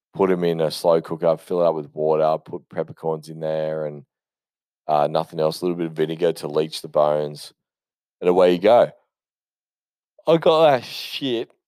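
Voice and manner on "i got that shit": very high and slow, said through a yawn. Explaining a brisket bone broth recipe, yawning through the words. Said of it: "Sorry for the yawn".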